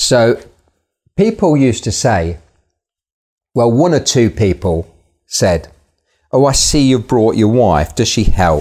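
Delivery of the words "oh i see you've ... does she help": mock-derogatory, belittling tone, faster. Recalling people remarking on the speaker's wife coming along, mimicking a derogatory tone. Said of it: "in a very, very derogatory kind of tone of voice".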